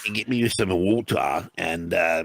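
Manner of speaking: put-on mock Australian accent. Mocking how a man from Essex asked for water: put-on Australian accent. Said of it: "you sound Australian".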